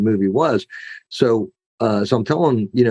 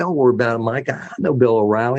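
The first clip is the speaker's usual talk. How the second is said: put-on Arkansas-accented speech. Retelling a conversation, the speaker quotes a man in an Arkansas accent. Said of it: "a good Arkansas accent".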